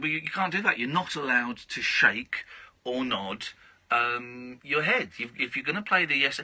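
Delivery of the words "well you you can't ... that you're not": plain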